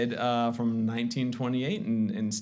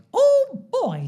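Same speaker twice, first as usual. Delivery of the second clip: relaxed round cartoon falsetto, higher and louder; 9 dB louder than usual. Showing how a relaxed voice sounds: relaxed round falsetto Mickey Mouse voice. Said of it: "make a nice round sound".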